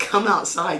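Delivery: ordinary talk, nothing marked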